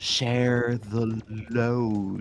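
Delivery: drawn-out, slow speech. Recalling a Lord of the Rings film scene, quoting Sam Gamgee very slowly. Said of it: "it's like said really slow".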